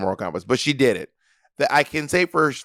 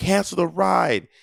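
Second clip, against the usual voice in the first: put-on harsh, rough, pitched-up yell; 7 semitones higher than usual. Retelling a video of a woman mad at an Uber driver: imitating her yelling. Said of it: "it's just her yelling".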